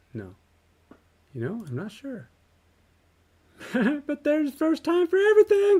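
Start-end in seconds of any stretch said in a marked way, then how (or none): 3.7-5.8 very high-pitched, loud, cheery happy-camper voice. Player voicing Jinx during a game fight: happy camper Jinx voice. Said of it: "I'm giving her the kind of happy camper voice".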